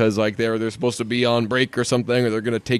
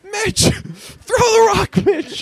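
mock very high scream, wildly swinging in pitch; 3 dB louder than usual. Retelling the director yelling at an actor, retelling Jason Sudeikis screaming. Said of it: "he's just screaming like".

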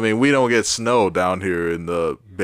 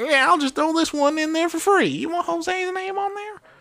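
very high put-on hillbilly voice. Acting out a cousin tattooing people in his basement: inbred redneck voice. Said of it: "sound like some inbred redneck".

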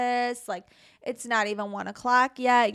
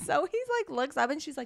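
ordinary talk, nothing marked

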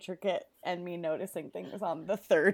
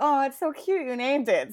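mock sarcastic dying voice, higher and louder; 6 semitones higher, 7 dB louder than usual. Retelling a book character's words as she's dying: imitating a sarcastic, dying character. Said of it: "sarcastically as she's dying".

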